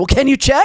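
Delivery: extreme, pushy, very high, loud insistent tone. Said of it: "That seems a little extreme".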